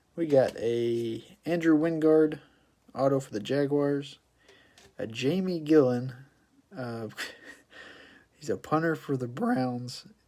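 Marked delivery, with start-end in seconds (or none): 5.0-10.1 voice cracking mid-phrase, stifled laugh. Going through cards just pulled, the speaker's voice cracks as he cracks up. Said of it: "my voice just cracked there because I'm cracking up".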